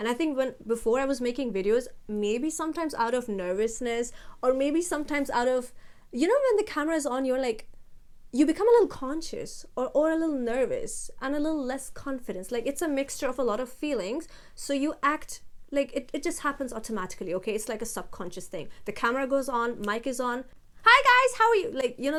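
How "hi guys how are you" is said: very high-pitched, loud, chirpy voice. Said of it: "that high-pitched tone".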